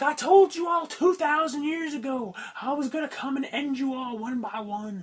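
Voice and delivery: mock, slow, stretched-out, drawn-out shouted delivery. Retelling how Bray Wyatt comes out: imitating Bray Wyatt yelling. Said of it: "'Cause he comes out and yells".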